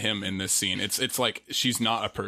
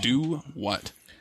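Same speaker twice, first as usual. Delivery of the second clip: ordinary talk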